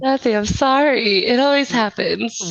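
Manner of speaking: talking through laughter and giggling. Apologizing after being asked why they're laughing: laughing while talking. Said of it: "Why are you laughing already?".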